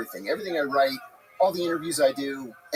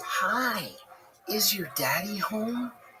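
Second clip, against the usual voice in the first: put-on high, slow, very drawn-out sugary sweetness; 5 semitones higher, 6 dB quieter than usual. Retelling what a visitor at the door said, in a sugary, sweet voice. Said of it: "I hear this sugary, sweet voice say".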